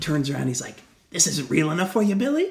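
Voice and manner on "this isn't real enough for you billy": pitched-up, wounded-sounding, mock-hurt taunting. Retelling a film scene, quoting Pennywise taunting Bill: imitating Pennywise's mock-hurt mocking tone. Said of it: "his line reading is like he's hurt".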